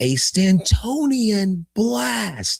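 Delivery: very high baseball announcer calling voice. Act out the announcer as Giancarlo Stanton hits the ball, in a John Sterling announcer voice. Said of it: "you hear the announcer say".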